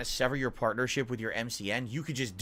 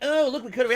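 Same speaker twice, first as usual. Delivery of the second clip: mock gossipy schoolgirl voice, higher and louder; 12 semitones higher, 7 dB louder than usual. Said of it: "like two schoolgirls that were gossiping".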